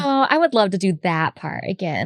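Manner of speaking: ordinary talk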